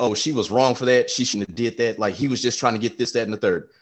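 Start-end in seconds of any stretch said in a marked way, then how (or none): none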